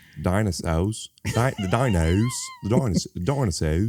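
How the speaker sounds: put-on swooping Australian accent. Redoing the dinosaur line on request, Sam Neill with Australian accent. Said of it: "do it like Sam Neill with the Australian accent".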